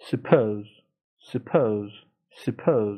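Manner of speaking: British pronunciation of "suppose". Showing learners how the word is said: British pronunciation of suppose. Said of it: "بریتانیاییشه".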